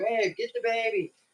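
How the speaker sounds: mock urgent, high-pitched shouted yell. Retelling a dream where his girl calls out: imitating someone yelling. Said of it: "my girl was yelling".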